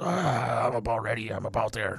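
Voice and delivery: slow, gross, put-on hoarse raspy voice. Joking about what listeners could hear, in a put-on gross raspy voice. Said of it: "my gross, raspy voices".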